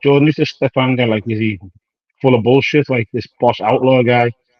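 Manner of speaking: normal talking voice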